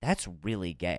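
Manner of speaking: mock worried tone, very low and soft. Retelling what he said walking into the bathroom mid-brushing, mock-concerned tone. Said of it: "He said this like concerned".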